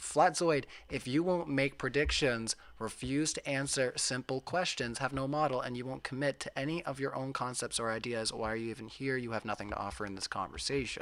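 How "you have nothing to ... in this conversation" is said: ordinary talk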